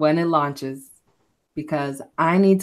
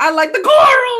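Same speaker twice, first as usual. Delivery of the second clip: mock high, loud gushing shout. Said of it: "and he's like".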